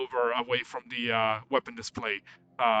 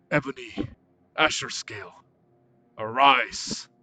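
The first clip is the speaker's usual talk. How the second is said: raised voice, just shy of a shout. Calling out over the two objects, in a raised voice, not shouting. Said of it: "in a more uh, raised tone of voice".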